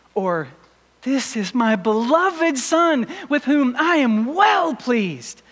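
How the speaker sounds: excited, joyful. Showing another way to read the verse, excited and joyful. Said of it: "I think God was excited here".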